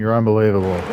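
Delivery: ordinary delivery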